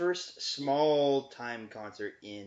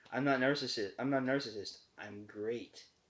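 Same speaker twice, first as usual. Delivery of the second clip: ordinary talk, nothing marked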